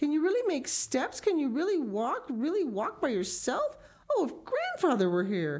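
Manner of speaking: joyful, delighted, very high cry with swooping pitch. Narrator voicing Heidi as Clara takes steps by herself, crying out with delight. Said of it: "Heidi cried out with even greater delight".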